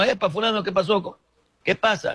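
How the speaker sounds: high, urgent calling out.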